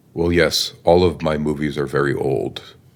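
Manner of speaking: plain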